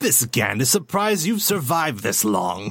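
evil, menacing alien creature voice. Speaker demonstrates a voice from a tabletop campaign, evil Gand voice. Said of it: "this Gand voice was just an evil version".

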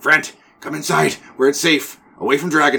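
high goblinoid creature voice, calling out. Voicing an unseen goblin calling out from inside a building, goblinoid voice. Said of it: "another goblinoid sounding person".

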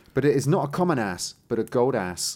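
ordinary talk

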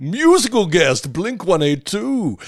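very high-pitched, TV announcer-style voice. Listing an episode's guest stars: SNL announcer impression. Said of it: "that's my S N L impersonation".

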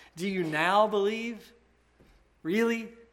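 put-on scoffing voice. Quoting Jesus answering the disciples who claim belief: Jesus scoffing. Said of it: "imagine him kind of scoffing in his voice".

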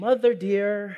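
put-on coaxing, sweet-talking voice. Retelling how he spoke to his mother expecting no: imitating own coaxing tone. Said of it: "the inflection in my voice changes".

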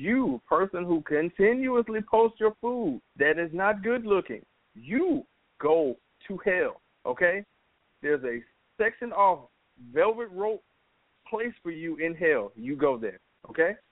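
slow, over-enunciated, every word carefully spelled out. Telling people who post bad-looking food photos off, enunciating each word. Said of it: "because I'm going to enunciate".

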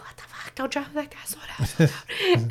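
put-on hushed, panicky, pleading, stressed whispered outburst. Retelling a stressed brother's shouts at the driver in the rain: imitating a stressed brother. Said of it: "he was stressed".

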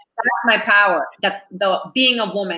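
ordinary talk

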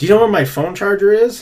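put-on drunk voice. Retelling a drunk friend asking for his charger: imitating drunk Chandler. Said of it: "he's, like, way drunk".

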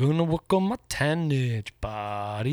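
put-on slow stoner-dude delivery. Describing an actor who plays himself in every movie: Pauly Shore impression. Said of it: "Pauly Shore is, like".

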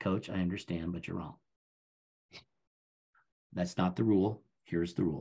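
hushed, soft, very quiet voice. Retelling how they answer a ranting coach, in a very quiet voice. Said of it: "you say in a very quiet voice".

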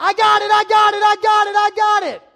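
very high, very loud, shrill, frantic, nervous yelling. Retelling running to the ball at the fence: retelling own screaming. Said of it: "I'm still screaming".

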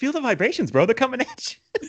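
voice pushed way up very high. Imagining Mark Wahlberg's magic power: Mark Wahlberg impression. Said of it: "I wanna think about Mark Wahlberg".

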